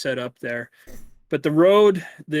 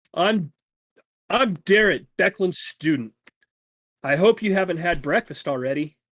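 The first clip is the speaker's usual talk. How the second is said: put-on cheerful young man's voice; 3 semitones higher than usual. A young student of Beckland's introduces himself to the group, cheerful Darrett voice. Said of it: "a very cheerful voice from a young man".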